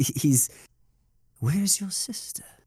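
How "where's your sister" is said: guarded voice with emotion held in. Showing how a scene is delivered: Silco voice, guarded, holding back emotion. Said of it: "he's trying not to be emotionally touched".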